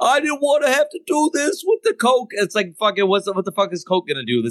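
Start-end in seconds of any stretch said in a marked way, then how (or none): 0.0-2.3 acted, pitched-up blubbering and sobbing through tears. Retelling a game story, the speaker quotes a character's line: imitating someone crying. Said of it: "he's fucking crying the whole time going".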